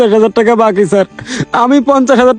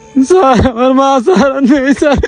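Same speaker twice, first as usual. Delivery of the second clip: weeping, sobbing through the words; 2 semitones higher than usual. An employee who missed work explains himself to his boss, crying while talking. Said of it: "এখন কান্নাকাটি করতেছো কেন?".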